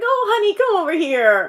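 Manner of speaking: very loud, high-pitched, kindly nice-guy character voice. Showing how easy it is to play a nice character: playing a nice character. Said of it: "if I play a nice character".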